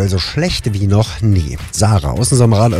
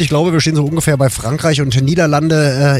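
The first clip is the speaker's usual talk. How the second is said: normal talking voice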